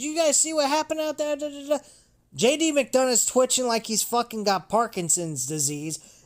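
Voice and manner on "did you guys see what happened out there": high, rushed, mock frantic screaming. Acting out someone who runs backstage after her fight, imitating someone screaming. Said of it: "she's screaming".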